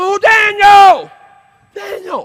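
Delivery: very high, very loud, high-pitched yelling call. Retelling the story of a man running up there, retelling a yell. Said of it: "he starts yelling".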